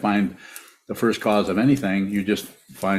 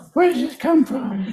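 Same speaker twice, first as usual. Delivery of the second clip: squeaky, very high put-on fish voice. Asked to do the fish voice again, asking a question in a fish voice. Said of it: "The fish voice".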